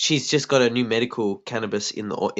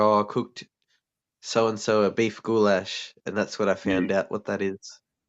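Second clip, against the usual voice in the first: ordinary talk, nothing marked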